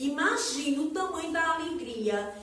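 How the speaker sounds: ordinary talk, nothing marked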